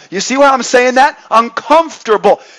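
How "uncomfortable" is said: uncomfortable hammered home with heavy stress. Repeating a word to make a point, heavy emphasis on 'uncomfortable'. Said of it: "I'm trying to say it with emphasizing it".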